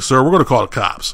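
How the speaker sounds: normal talking voice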